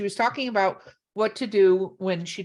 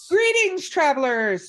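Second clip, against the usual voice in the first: very excited, high-pitched voice bursting with excitement; 5 semitones higher than usual. Greeting the travelers, saying it very excited. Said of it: "I said that very excited".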